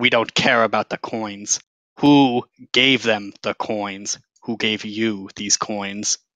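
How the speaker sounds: strongly menacing serpent-creature voice. Game master voicing a snake creature questioning the party: menacing Yuan-Ti voice. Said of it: "this character is very scary. Like this character is very menacing. / Like the thickness of its like snake tail is probably like mm, like three and a half feet of thick snake. / He's like".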